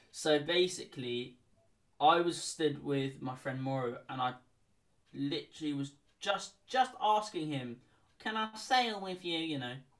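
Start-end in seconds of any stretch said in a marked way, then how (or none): 8.2-9.3 put-on high, young teenage voice of a fourteen-year-old. Retelling asking a friend to sail together: put-on fourteen-year-old voice. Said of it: "in my, like, fourteen-year-old voice".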